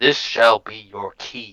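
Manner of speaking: booming, resounding, mechanical machine-like voice. Retelling a game session, voicing the ship in a booming mechanical voice. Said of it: "in its booming mechanical voice".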